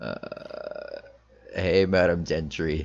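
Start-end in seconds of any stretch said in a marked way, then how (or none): 1.5-2.9 very unenthusiastic, unhappy, joyless, can't-be-bothered delivery. A player's character answers Madam Gentry's greeting, super unenthusiastic and not happy. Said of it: "in like a super like unenthusiastic, like not happy mood".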